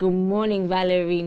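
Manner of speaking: put-on deep voice. Describing a romantic morning, voicing a greeting in a deep voice. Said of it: "A deep voice saying".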